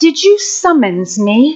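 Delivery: put-on British accent, slow. Retelling what the phone assistant said mid-sermon: imitating a British gentleman's voice. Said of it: "this British man's voice says".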